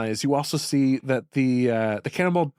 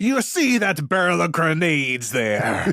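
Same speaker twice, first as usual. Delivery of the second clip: put-on slight, somewhat piratey accent. Voicing the captain who grabs a player's arm: a bit of a piratey accent. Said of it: "a bit of a piratey accent".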